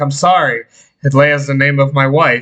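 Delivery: plain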